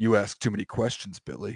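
mock grave, dead serious, very low and soft. Retelling a video, the speaker voices the other mechanic acting real serious. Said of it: "the other mechanic gets real serious".

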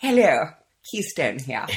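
put-on posh, old-school English radio announcer voice. Demonstrating the BBC voice to the other speaker, in a BBC voice. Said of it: "The BBC voice".

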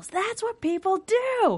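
very high, mock manic, crazed yell. Speaker recounts an uncomfortable TV scene after Sherlock speaks; retelling Moriarty's yell. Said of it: "Moriarty just yells".

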